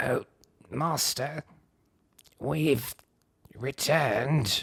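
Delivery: raspy undead zombie voice. Narrating Jeff stepping out toward the monster, reading his line in a raspy undead zombie voice. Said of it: "spoke in his best attempt at a zombie's raspy, undead voice".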